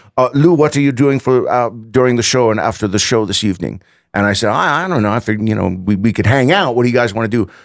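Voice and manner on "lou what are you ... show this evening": very bad, clumsy Swedish accent. Retelling the Avatar guys asking Lou about after the show: very bad Swedish accent. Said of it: "I do a very bad accent".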